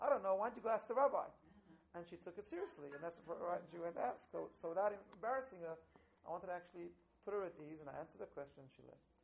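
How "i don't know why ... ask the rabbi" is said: very loud, scathing, raised sarcastic tone. Retelling how a woman's boss answered her question, retelling a sarcastic reply. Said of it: "So with sarcasm".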